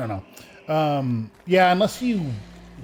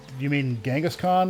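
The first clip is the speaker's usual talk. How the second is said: ordinary talk, nothing marked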